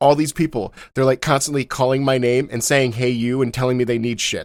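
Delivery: ordinary delivery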